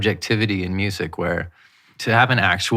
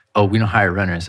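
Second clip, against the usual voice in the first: plain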